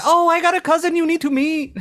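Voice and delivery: put-on Filipino accent, pitched way up. Retelling what a waitress at a nearby bar always says, imitating a filipino accent. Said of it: "Sorry about the accent".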